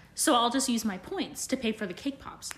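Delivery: plain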